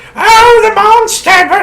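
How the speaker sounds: put-on very high, shrill, comic old lady voice. Describing a woman in the second movie: old lady voice. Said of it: "like doing like the old lady voice".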